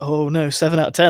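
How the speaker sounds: put-on, disappointed, dismayed groan. Mocking how one sounds giving a review score: mock dismay. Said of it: "I'm saying it like".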